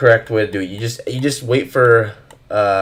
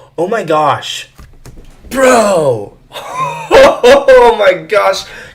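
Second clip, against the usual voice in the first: shrill, high, thrilled, excited yell; 10 semitones higher, 7 dB louder than usual. Showing viewers the Phoenix model, yelling excitedly. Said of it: "I didn't mean to yell like that".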